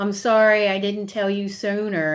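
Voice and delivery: mock crying, tearful put-on sobbing voice. Retelling what she said on the last day of school, imitating someone crying. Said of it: "she started crying, saying".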